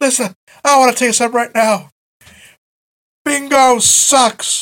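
mock yelling. Retelling how he announced it in the middle of the arena: imitating someone yelling. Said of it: "just yelling".

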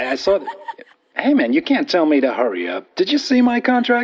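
animated, high movie-star voice with big pitch swings. Arguing when told to hurry up: Tom Cruise impression. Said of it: "Ladies and gentlemen, Tom Cruise".

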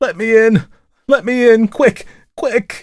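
very high, panting, breathless, frantic terror. A man clattering at a woman's door late at night begs entry, breathless with terror. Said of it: "he exclaimed, almost breathless from terror and fatigue".

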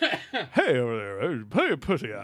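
loud, swooping cartoon mascot calling voice. Asking the others to guess who it is, doing a cereal mascot impression. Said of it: "who am I imitating?".

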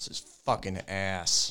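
annoyed, heated, angry, fed-up outburst. Complaining to another speaker about gaining weight: angry. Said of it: "I love your anger".

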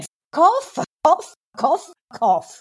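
mock very slow, drawn-out, high, full-throated top-of-lungs yell. Re-enacting a shout at a driver in a car park: re-enacting own shout at top of lungs. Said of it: "I shouted at the top of my lungs".

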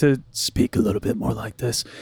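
deep, gruff voice, dropped low. Discussing actors who played Batman, the speaker demonstrates the gruff Batman voice. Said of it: "introduced the gruffy voice for Batman".

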